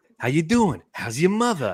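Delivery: put-on Boston accent. Explaining the earlier bit with an impression: Mark Wahlberg SNL impression. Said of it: "doing the Mark Wahlberg on, uh, S N L thing".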